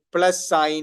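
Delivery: plus sign read slowly, word by word, like a machine. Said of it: "It will say plus sign instead of plus".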